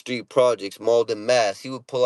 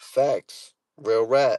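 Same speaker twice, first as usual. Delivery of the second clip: plain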